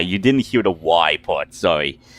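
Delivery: normal talking voice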